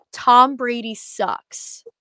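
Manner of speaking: all-out, loud, jeering yell at top of lungs. Retelling shouting at the top of the lungs past curtains: retelling a shout at top of lungs. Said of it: "I shouted at the top of my lungs".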